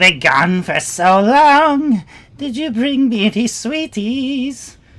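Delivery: piercing, very high, shrill rising voice. Narrating to players, a voice calls out from the chamber's center, shrill voice. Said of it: "you all hear a shrill voice call out".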